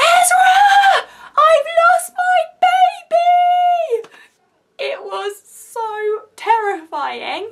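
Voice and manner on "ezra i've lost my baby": high, loud, frantic panicked scream. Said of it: "and I screamed".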